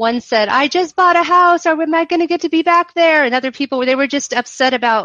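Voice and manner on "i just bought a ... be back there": put-on crying, high, wailing voice. Recounting a storm when the lights went out, imitating a crying passenger. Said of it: "people began to cry and wail".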